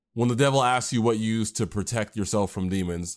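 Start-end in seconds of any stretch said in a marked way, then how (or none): none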